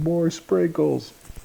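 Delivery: put-on very high, rough, rasping little-girl yell. Retelling a daughter at an ice cream shop: imitating a daughter yelling. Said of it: "My daughter just yelling".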